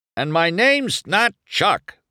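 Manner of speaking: very high-pitched, hollered line. A quitting pit crew member answers a sarcastic goodbye, hollering. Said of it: "the pity hollered".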